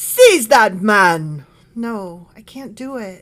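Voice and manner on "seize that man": loud, commanding, put-on British accent. Asked by the other speaker to try the line, giving an attempted british accent. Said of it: "like with a British accent".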